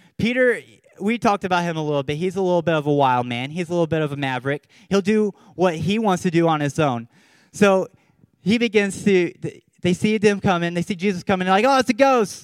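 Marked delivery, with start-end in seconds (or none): 11.7-12.5 acted, high, loud, terrified cry of alarm. Retelling how the disciples saw Jesus coming: imitating terrified disciples. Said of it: "They're terrified".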